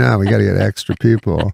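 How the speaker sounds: ordinary talk, nothing marked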